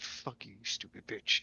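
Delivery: hushed, breathy mutter under the breath. Voicing a character who hears an echo: muttering under his breath. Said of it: "under his breath and just be like".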